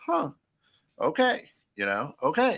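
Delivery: high-pitched dawning realization. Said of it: "where I go".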